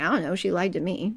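normal talking voice

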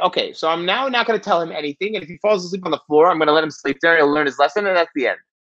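ordinary talk

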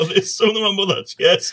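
talking while laughing through the words. Apologizing for laughing at another speaker's remark, laughing while talking. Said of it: "I know I'm not supposed to laugh".

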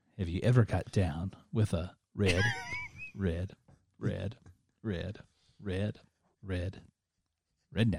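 stuttering on 'red'. Asking the listener a question, stuttering on 'red'. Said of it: "He's stuttering like [name]".

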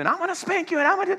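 mock scolding yell, very high-pitched and shrill. Asking the audience about a mom yelling at her kid, imitating a mom yelling. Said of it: "she's like yelling at you".

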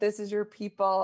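loud, screaming, accusing tone. Retelling a man charging at the speaker: imitating a man screaming.

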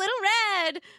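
delighted, happy cry, very high. Grandmother greets her visitor at the cottage door: happy exclamation. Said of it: "Grandmother exclaimed happily".

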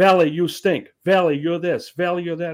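loud, high yelling. Retelling a fan heckling a catcher at spring training: imitating someone yelling. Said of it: "And he was yelling at him".

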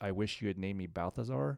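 plain

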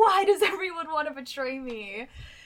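put-on high, loud, screaming toddler-style tantrum. Discussing a character's meltdown, imitating Akito screaming. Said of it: "screaming, like".

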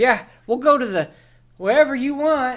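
exasperated. Voicing a character who agrees to follow the party: exasperated. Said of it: "he's just exasperated with words".

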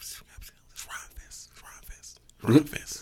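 hushed whisper under the breath.

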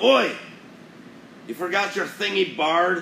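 loud, very high-pitched hollered yell. Narrating a game scene where a voice from behind yells at the bard. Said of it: "A voice from behind him yells".

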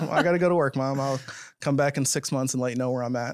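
ordinary talk

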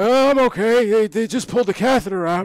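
put-on very high, loud, squawking cranky old man voice. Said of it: "let's play it out".

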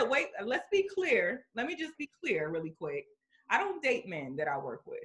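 ordinary talk, nothing marked

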